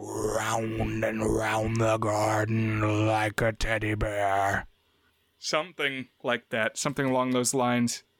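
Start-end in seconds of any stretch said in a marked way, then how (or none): 0.0-4.7 wispy, low ghost voice, very slow. Imitating the ghost from a film for another speaker: wispy, low ghost voice. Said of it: "I'm gonna do my best".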